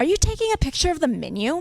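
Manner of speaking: disapproving, scornful, judgmental, high and swooping pitch. Retelling the cashier's question, mimicking a judgmental tone. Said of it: "in a very judgmental tone of voice".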